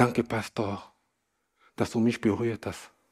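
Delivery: soft, tearful, halting, barely able to speak. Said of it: "mit Tränen in den Augen und er konnte nicht mal richtig sprechen".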